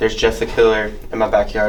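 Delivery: ordinary talk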